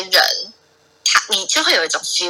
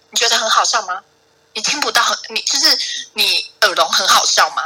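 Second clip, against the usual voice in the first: mock, furious, angry outburst; 3 semitones higher than usual. Retelling the supervisor's reaction after laughing: imitating a furious outburst. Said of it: "他就是直接发火".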